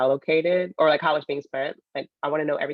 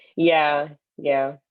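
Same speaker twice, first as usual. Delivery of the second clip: unconvinced, unenthusiastic, reluctant agreeing tone; 4 dB louder than usual. Agreeing to a rule against touching the phone: unconvinced, unenthusiastic agreement. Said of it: "You sound so convinced".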